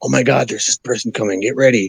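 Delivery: mock whispered voice. Retelling how someone came to warn you: imitating a whisper. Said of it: "come and whisper it to you".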